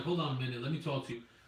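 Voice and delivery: plain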